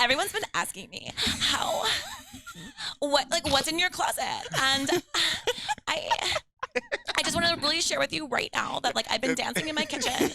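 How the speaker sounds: very high, sing-song, swinging celebrity-style voice.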